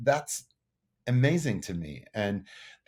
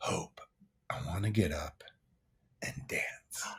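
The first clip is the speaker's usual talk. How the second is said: soft whisper. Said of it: "Steve whispers into Hope's ear and says".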